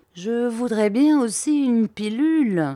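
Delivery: shy, timid, halting and hesitant. A detective who feels inferior to the others asks for something, timidly. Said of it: "dit timidement Bobby".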